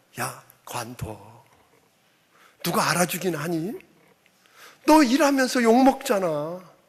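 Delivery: devil voice whispering. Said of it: "귓가에다 대고 계속 속삭입니다".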